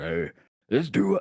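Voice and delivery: deep, unhurried voice with words drawn out. Imitating how a person would say a line, in a deep voice. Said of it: "He has a deep voice though. He's like".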